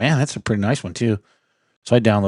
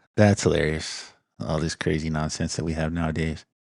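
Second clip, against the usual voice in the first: ordinary talk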